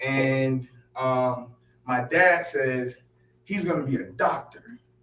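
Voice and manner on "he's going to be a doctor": put-on absolutely sure, matter-of-fact tone, pitched up. Telling how his dad introduced him as a toddler, imitating dad's absolute certainty. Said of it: "he says it so absolutely".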